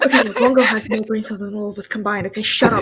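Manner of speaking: whispering loudly. Bickering with the group while whispering, loud whisper. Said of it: "Why are we whispering so loud?".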